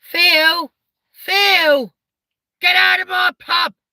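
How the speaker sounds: shrill, loud, drawn-out, high-pitched voice. Answering a request for a Peggy Mitchell impression: Peggy Mitchell impression. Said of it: "Can you do a Peggy Mitchell impression?".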